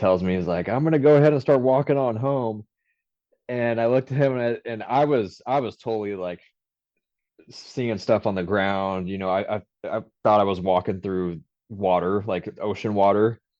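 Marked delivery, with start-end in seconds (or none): 0.7-2.7 heavy put-on Louisiana Southern accent, pitched up. Telling a story about a guy you were with, quoting him in a thick louisiana accent. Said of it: "He has a super thick accent".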